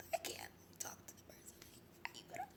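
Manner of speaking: mock very quiet voice. Retelling telling their dad they couldn't talk to someone: imitating a very quiet voice. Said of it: "I was talking like this".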